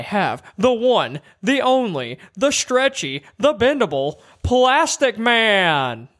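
very slow drawling announcer voice, "man" stretched out. Announcing Plastic Man's entrance, sounding like Doug Dimmadome. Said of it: "you sound like you're Doug Dimmadome".

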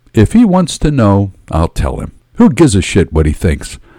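plain

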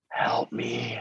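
barely audible, breathy, very quiet whisper. Telling how he pleads to other people while working out, imitating him whispering. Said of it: "He whispers".

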